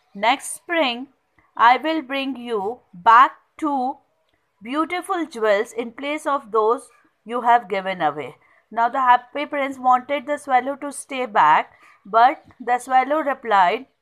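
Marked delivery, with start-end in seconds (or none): none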